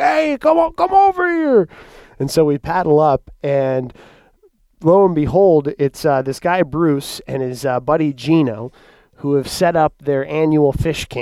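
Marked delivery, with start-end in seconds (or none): 0.0-1.7 very high, long, drawn-out yell. Retelling how a man on the point called them over, retelling a man's yell. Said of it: "he's yelling at us".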